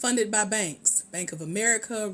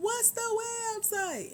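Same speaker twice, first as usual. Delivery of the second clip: much higher-pitched, clueless-sounding voice. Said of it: "Somebody's still gonna ask me".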